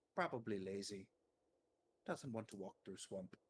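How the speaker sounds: voice dropped to a low, quiet mutter. Playing a character asked about Master, the speaker answers in a lowered voice. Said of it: "Lowers his voice".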